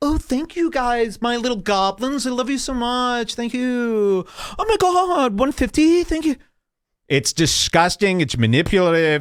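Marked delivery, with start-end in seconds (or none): 0.0-6.4 very high, sugary, cutesy-tootsy sweet talk. Speaker mocks how others thank their audience, in a mocking cutesy voice. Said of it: "they do it in this cutesy tootsy way".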